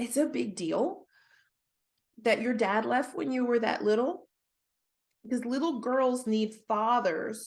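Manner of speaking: choked-up, tearful voice on the edge of tears. Talking with someone whose dad left when she was little, tearing up. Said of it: "I'm tearing up".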